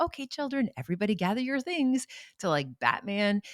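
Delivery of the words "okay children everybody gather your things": very high, pitched-up storybook nanny voice. Retelling own past words to the children on a calm morning: Mary Poppins voice. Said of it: "Mary Poppins, where I'd be like".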